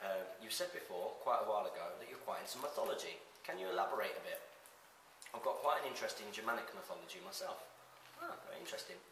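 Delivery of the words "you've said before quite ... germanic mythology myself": ordinary talk, nothing marked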